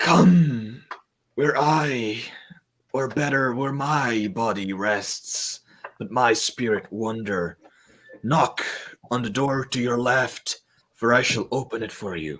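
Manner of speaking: disembodied, echoing voice, as if calling from afar. Game master voices a spirit calling players toward the left door, disembodied voice. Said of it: "I'm speaking with a disembodied voice".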